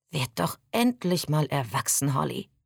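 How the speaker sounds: plain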